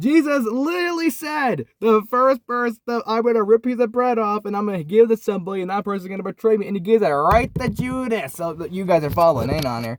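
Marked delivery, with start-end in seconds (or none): 0.0-8.3 passionate, intense, worked-up emphasis, pitched up. Telling listeners the story of Jesus handing bread to Judas: passionate. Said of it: "I'm just getting kind of passionate right now".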